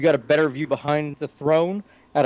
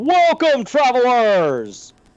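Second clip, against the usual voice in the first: very high, resounding, booming, grand delivery; 9 semitones higher, 5 dB louder than usual. Game master voicing an unseen figure behind the door the players knocked on, booming voice. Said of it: "You hear a booming".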